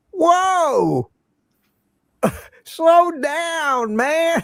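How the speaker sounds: very high, very slow Southern drawl, whoa stretched. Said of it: "slow Southern drawl".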